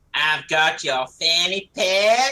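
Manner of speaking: dead broad put-on American accent, loud and slow. Retelling what a woman said on holiday, in a broad American accent. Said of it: "The way she said it in dead broad, like American accent".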